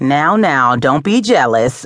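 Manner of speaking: playful, ribbing, teasing tone. Narrating a woman answering her friend's jealous remark, teasing. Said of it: "she teased".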